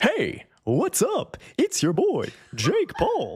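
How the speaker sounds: very high, very slow, stretched, swooping sing-song. Mocking an old YouTube trend: imitating YouTuber intro voice. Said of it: "Who the fuck talks like that?".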